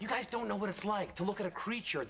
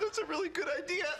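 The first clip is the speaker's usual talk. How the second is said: weeping through the words, very high voice; 9 semitones higher, 3 dB louder than usual. A character answers a harsh insult, crying.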